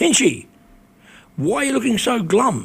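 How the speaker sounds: high-pitched shout, projected across a room. Retelling being called out across a crowded bar: imitating someone shouting. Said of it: "he shouts at me".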